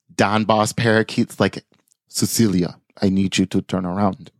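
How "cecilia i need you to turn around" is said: put-on Russian-accented character voice. Voicing the boss parakeet talking to Cecilia in a story, Russian accent. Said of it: "he's got the Russian accent all of a sudden".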